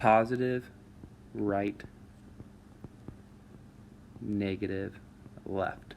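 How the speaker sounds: slow dictation with long pauses between words. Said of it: "We'll even go".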